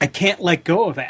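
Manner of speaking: ordinary delivery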